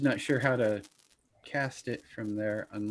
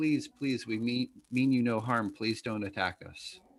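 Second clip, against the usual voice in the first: pleading, faster. In a game, a player's character calls out to attacking creatures, pleading. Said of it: "They don't seem to respond to your pleads".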